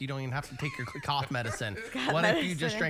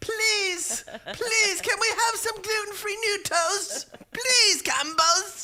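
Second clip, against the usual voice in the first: very high, loud, shrill, slow, drawn-out wailing; 8 dB louder than usual. Acting out gluten-intolerant children begging at the factory: mock begging like Orphan Annie. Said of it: "acting like Orphan Annie at the front steps".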